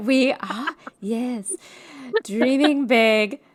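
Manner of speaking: slow, drawn-out, would-be sexy voice. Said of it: "you just sounded like Carol Channing trying to talk sexy".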